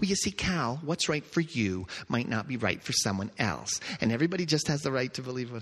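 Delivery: mock, put-on, sickeningly sweet saccharine voice. Acting out a dismissive person talking down to the speaker, in a mock sickeningly sweet voice. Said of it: "In that sickeningly sweet voice".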